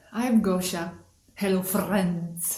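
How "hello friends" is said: put-on Scandinavian-sounding accent. Greeting viewers again, imitating Scandinavian people: Scandinavian-sounding accent. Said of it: "I'm sometimes talking like sometimes some Scandinavian people".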